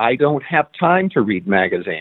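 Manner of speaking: ordinary talk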